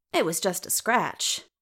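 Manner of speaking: ordinary delivery, nothing marked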